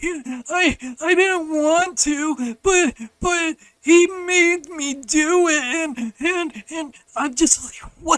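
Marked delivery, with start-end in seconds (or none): 0.0-6.1 put-on crying, higher, louder and slower. Retelling how his sister blamed him in front of grandma, imitating Katie crying. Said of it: "And Katie's crying".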